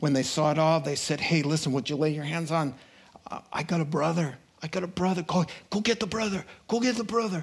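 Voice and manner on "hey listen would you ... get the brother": mock, eager, insistent pleading voice. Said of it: "And then they pleaded".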